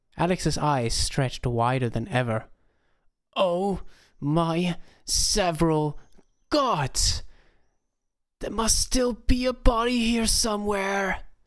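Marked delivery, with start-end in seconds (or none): 3.3-11.2 high, drawn-out, shouted whisper. Narrator reads a character's reply in a story: shouted whisper. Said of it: "he shouted in a whisper".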